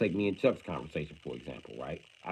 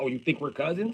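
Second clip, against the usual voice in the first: put-on angry tone; 9 semitones higher than usual. The speaker retells a friend's angry reaction to him: imitating angry Chuck. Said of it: "Chuck was so fucking angry at me".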